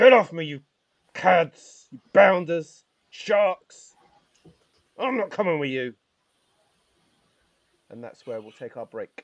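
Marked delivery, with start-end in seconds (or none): 0.0-5.9 put-on very high, very loud, drawn-out yell in British accent. Narrating a scene, voicing Gaston shouting down from upstairs in a British accent. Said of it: "shouted down from upstairs in a mistakably British accent".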